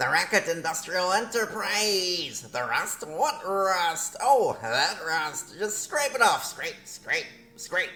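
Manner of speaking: high, squeaky, far-off goblin voice. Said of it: "Goblin voice".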